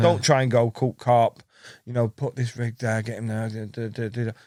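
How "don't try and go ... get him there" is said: ordinary talk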